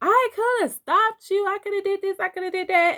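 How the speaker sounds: very high, hollered cop voice. Recounting how a cop honked and yelled out during a stop, retelling a cop's yell. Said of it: "she yells out".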